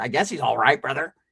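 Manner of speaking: noncommittal, unimpressed, offhand, lukewarm way of talking. Retelling the nephew's answer when asked what's up: imitating the nephew's way of talking. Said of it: "That's how he talked".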